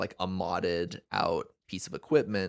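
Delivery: ordinary talk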